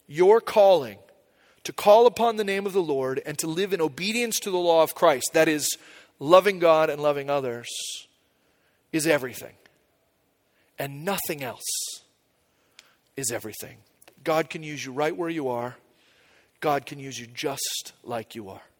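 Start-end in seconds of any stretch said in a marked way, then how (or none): 0.1-13.7 slower and deliberate, phrases carefully spaced out. A speaker repeats a statement to listeners, a little slower. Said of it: "Let me say that again a little bit slower".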